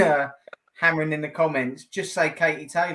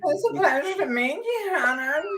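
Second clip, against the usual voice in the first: very high voice that keeps cracking; 12 semitones higher than usual. Showing the others an impression of her, imitating a woman's breaking voice. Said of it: "her voice like breaks, doesn't it".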